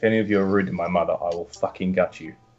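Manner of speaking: deep, very low, hushed, quiet menacing tone. In character, turning to the party and addressing them; threatening. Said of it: "very threateningly say".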